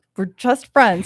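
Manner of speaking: put-on irritated tone. Retelling own reply to a friend's teasing: imitating own irritated tone. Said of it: "'cause it's really irritating me".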